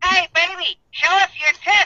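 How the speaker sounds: put-on talking parrot character voice. A host at a bar voices his parrot from a pirate, in talking parrot voice. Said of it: "I got this parrot from a pirate".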